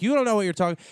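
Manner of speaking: high, loud hollering. Retelling how a bachelorette party yelled back at a comic: imitating someone hollering back. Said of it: "hollering back at him".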